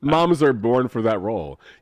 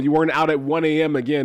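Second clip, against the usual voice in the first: usual speaking voice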